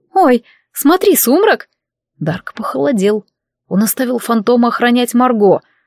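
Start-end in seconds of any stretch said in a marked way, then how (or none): 0.1-1.6 high, startled, surprised cry of astonishment. Lori, in mid-conversation, stares past Dark's back: surprised exclamation. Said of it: "удивленно уставилась ... и воскликнула".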